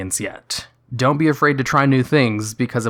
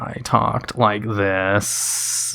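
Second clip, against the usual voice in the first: very slow, creaky vocal fry; 3 semitones lower, 3 dB quieter than usual. Showing how they used to talk with vocal fry. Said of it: "how do you do voice fry?".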